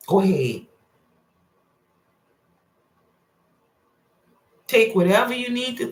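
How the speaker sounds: mocking, sarcastic tone. Addressing listeners directly, urging them on: sarcastic. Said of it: "I'm being sarcastic".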